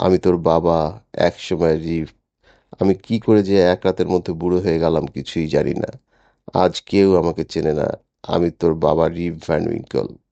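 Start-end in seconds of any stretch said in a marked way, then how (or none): none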